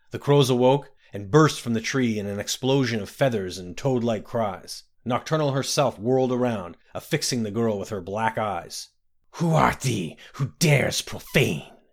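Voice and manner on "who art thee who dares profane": whole line hissed. Narrator reading the princess confronting a girl who disrupted the ceremony, hissed. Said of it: "the princess hissed".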